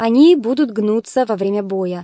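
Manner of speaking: ordinary delivery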